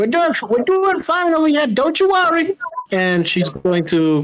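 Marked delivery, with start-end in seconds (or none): 0.0-2.6 shouting, much higher pitch. Playing a character who calls back after someone else shouts in worry, shouting. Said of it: "Lula's going to shout back".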